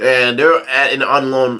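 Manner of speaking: normal talking voice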